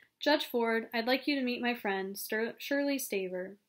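ordinary delivery, nothing marked

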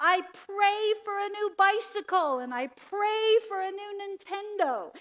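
put-on, high, full-throated yell at full volume. Telling a joke about two boys praying before christmas, imitating the younger boy yelling. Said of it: "at the top of his lungs, he yelled".

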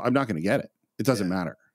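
plain

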